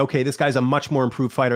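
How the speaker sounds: ordinary talk, nothing marked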